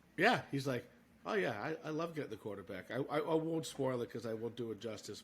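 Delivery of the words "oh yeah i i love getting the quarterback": put-on flat voice, quieter. Describing mic'd-up Joey Bosa, speaker imitates him, flat and emotionless. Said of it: "as flat like emotion as you get".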